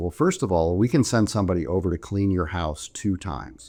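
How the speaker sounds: plain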